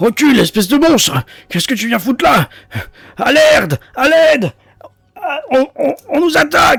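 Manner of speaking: very high, shrill bawling yell. A guard facing a monster turns his head toward the tunnel, yelling. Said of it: "Il gueule en tournant la tête".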